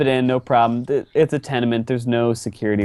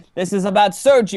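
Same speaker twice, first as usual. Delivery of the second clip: furious shouting, higher; 9 semitones higher than usual. Voicing an angry character who blames Sergio: yelling angrily. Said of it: "He just starts yelling you about Sergio".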